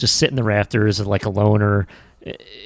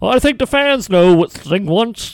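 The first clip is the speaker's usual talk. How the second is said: badly done put-on voice, pitch pushed way up; 11 semitones higher, 5 dB louder than usual. Retelling how an announcer hinted at a wrestling storyline: Tony Schiavone impression. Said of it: "that's my Tony Schiavone impression".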